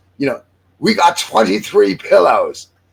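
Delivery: clumsy fake English accent. Retelling a story's dialogue, in a bad English accent. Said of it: "I'm going to do an English accent. I suck at it".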